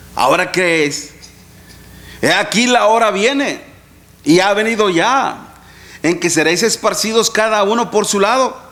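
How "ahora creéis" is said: acted, mock-ironic, sarcastic tone. A preacher quotes the Lord's reply to the disciples, acting out ironic tone. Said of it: "en un tono irónico, ¿ok? Medio sarcástico".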